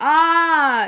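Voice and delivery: high, loud, mock startled shout.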